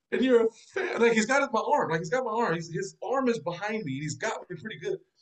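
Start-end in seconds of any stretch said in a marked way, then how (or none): 0.1-1.0 mock choked-up, tearful voice, catching, close to crying. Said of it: "he got choked up and started crying".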